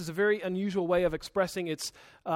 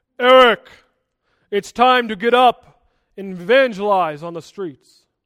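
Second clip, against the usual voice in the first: very loud, booming, thundering voice; 13 dB louder than usual. Imagining God speaking down to Eric over morning coffee: thundering God voice. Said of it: "in a thundering voice".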